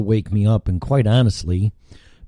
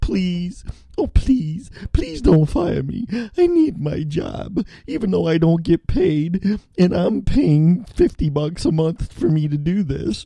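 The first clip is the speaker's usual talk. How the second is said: slobbering, pitched-up, put-on pleading; 9 semitones higher than usual. Apologizing for a no-show at work, mock pleading not to be fired. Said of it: "Is that enough slobbering".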